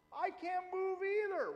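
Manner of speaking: high, slow, panicked cry. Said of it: "she goes".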